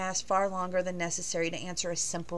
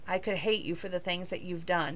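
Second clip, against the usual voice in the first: angry and low-voiced. A man answers a woman who has just cried, in a low, angry voice. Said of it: "he said in a low, angry voice".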